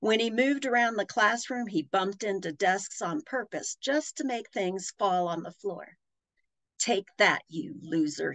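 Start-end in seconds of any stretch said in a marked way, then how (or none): 6.8-8.3 scornful, sneering, jeering. Reading a story, a boy knocks things off desks and sneers. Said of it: "he sneered".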